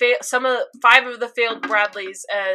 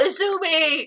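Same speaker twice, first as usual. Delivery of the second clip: mock, sudden, high-pitched, raised shouted yell; 7 semitones higher than usual. Retelling a scene where Sig yells a name: imitating Sig yelling. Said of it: "hearing Sig yell".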